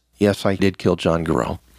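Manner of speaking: put-on flat monotone voice. Speaker retells what the accused said when brought to the police, imitating Phil Kenemer's monotone. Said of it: "in pretty nondescript monotone voice".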